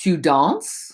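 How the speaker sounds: question-like rise on danses. French lesson on asking questions by intonation: rising intonation on danses. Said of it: "the raising of your voice".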